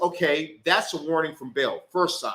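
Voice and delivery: ordinary talk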